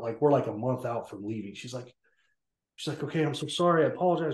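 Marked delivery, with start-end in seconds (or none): 2.9-4.4 mock panicked, freaked-out tone, higher. Retelling how the speaker's mom apologized after the soldiers came, imitating mom's panicked apology. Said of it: "my mom's freaking out".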